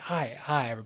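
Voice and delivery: very quiet. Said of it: "Bo is just kinda like".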